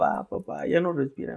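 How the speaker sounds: put-on cracking voice. Retelling a brother's phone call about their father: imitating a broken voice. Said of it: "así con la voz rota".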